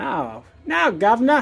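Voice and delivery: put-on London Cockney accent. Asked by a companion whether they're British, answering in a fake Cockney accent. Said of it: "we're back to being Cockney again".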